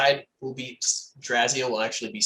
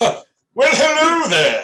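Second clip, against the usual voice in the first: put-on old man voice, much higher, louder; 13 semitones higher, 8 dB louder than usual. After muffins rejuvenate his vocal cords, a character speaks in an old man voice. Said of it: "he sounds like an old man".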